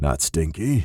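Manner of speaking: very low, deep, rough, raspy voice. Narrator reads a man's line as he lifts the kid, deep, raspy voice. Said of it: "he confirmed in a deep, raspy voice".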